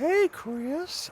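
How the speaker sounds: put-on very high creepy old-man voice. Showing the others an impression from Family Guy: Family Guy pedophile guy voice. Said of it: "I start doing the pedophile guy".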